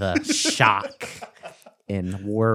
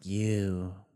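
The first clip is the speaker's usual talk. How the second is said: put-on long, drawn-out breathy voice, quieter; 7 dB quieter than usual. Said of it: "long and breathy like that".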